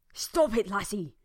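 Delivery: sharp, loud, urgent hiss. A man, hand over her mouth, warns her close to her ear: hissed. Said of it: "Amos hissed in her ear".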